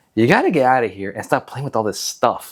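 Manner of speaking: play-acted irritated, annoyed scolding voice. Retelling a movie scene where the mom scolds her son: imitating an annoyed mom. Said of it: "she's kind of annoyed".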